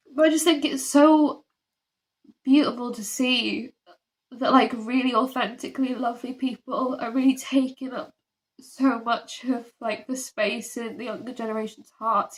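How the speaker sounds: voice wet with tears, crying while talking. Speaker apologizes for being unable to stop crying, then goes on crying while speaking. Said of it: "I honestly can't stop crying".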